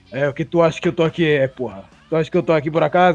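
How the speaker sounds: plain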